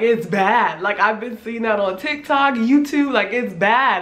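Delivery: ordinary talk, nothing marked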